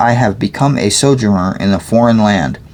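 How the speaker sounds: plain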